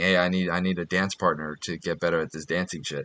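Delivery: quiet, low whispering. Retelling whispering in a dance partner's ear: imitating own whisper. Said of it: "I'm whispering in her ear saying".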